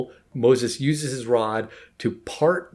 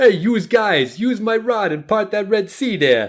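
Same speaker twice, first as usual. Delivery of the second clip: put-on loud, very high Brooklyn accent, pushed out; 10 semitones higher, 5 dB louder than usual. Re-performing a line he found wonderfully done, God with a Brooklyn accent. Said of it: "almost like a Brooklyn accent that God has".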